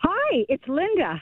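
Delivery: sounding surprised. A caller who never gets on finally gets through and gives her name: surprised. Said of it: "You sound surprised".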